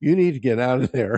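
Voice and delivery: urgent, loud yelling. Retelling a guy ordering them out of the water: imitating someone yelling. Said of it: "starts yelling at me".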